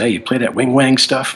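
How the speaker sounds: high, put-on Southern accent. Retelling how a bandmate answered a musician's newspaper ad, putting on a Southern accent. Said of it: "put up his best Southern accent".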